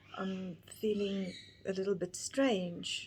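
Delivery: normal talking voice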